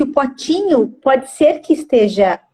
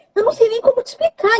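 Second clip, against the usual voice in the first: very high, rushed, nervous laughing through words; 10 semitones higher than usual. Retelling answering a question at the emergency room, retelling nervous laughing speech. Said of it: "E eu ri, só que era de nervoso".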